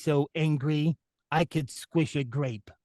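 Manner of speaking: mopey cartoon dog voice. Speaker shows another speaker a favorite cartoon voice: Droopy the dog voice. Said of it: "the voice of Droopy the dog".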